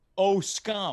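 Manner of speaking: ordinary delivery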